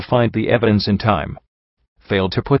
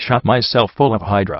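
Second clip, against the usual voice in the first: usual speaking voice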